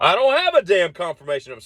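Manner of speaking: put-on mad, fed-up voice. Recounting being asked for a confirmation number while getting a prescription, acting out being mad. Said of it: "So we're both mad".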